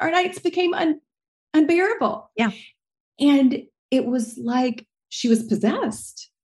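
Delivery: fighting not to cry. A parent recalling a child's sudden struggles at night, holding back tears. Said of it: "I'm trying not to cry".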